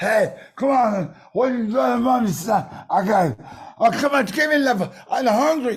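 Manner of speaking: put-on drunk delivery. Retelling how a friend fended off a crowd: imitating Val Kilmer acting drunk. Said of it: "Val immediately just went into being drunk".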